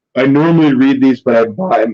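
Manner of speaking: voice breaking and cracking. Talking about comic book covers, voice cracking mid-sentence. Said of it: "my voice cracked".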